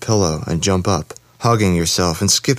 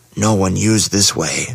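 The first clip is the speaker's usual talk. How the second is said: harsh, rough voice of a beast-man. Bruno leads the man he freed down a dark hidden corridor, harsh Bruno beast-man voice. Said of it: "the beast man said in his harsh voice".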